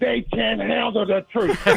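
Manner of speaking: dragged-out rough drawl. Putting a point in other words, in a Jack Nicholson voice. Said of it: "in my Jack Nicholas voice".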